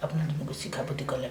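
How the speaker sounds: quiet, hushed tone.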